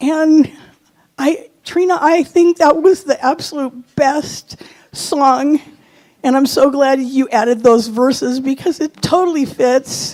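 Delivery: crying while talking. Thanking the church community and a departing minister: crying while talking. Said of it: "So I'm gonna cry".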